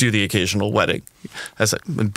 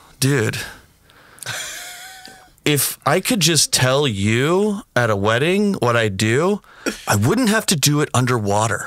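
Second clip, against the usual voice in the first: contemptuous, disdainful, drawn-out drawl, pitched up; 6 semitones higher than usual. Retelling what a submarine commander said at a wedding: imitating a disdainful reply. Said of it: "very disdainful".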